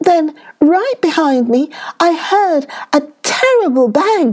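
timid frightened rabbit voice. Narrator reading the timid little rabbit recounting why he ran away, frightened. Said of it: "there lived a very timid little rabbit who was always trembling for fear that something terrible was going to happen to him".

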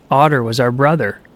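ordinary delivery, nothing marked

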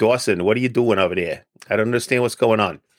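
native New Jersey way of talking. Talking to Dawson on the show, in a New Jersey accent. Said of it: "I could fall back into my New Jersey accent and say".

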